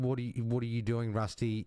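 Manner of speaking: ordinary talk, nothing marked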